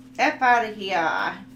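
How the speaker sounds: loud, slow, emphatic New Jersey accent.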